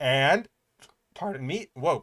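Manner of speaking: burp with a voice crack. Talking on a stream, excusing a burp and a voice crack. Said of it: "a burp and a voice crack".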